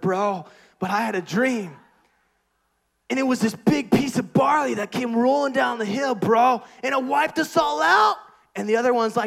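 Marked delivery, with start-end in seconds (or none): 0.0-8.2 full surfer dude, beach bro voice. Retelling the Gideon story, voicing a man in the Midian camp, surfer dude voice. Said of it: "I don't know why I'm talking like a surfer".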